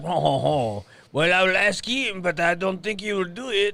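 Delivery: clumsy fake French accent. Showing a French accent after the daughter asks: bad French accent. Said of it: "I can't do a real French accent".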